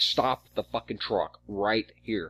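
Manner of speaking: mild yet heated, urgent screamed yelling. Retelling a driving lesson where the passenger almost hit a washout: imitating someone screaming. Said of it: "fucking screaming at her".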